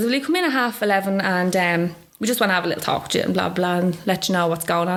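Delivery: ordinary talk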